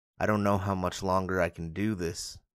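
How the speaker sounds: plain reading voice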